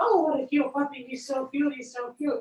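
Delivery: eager, excited puppy talk. Demonstrating how to greet a dog to ramp up excitement, in an excited voice. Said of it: "talking to them in an excited voice".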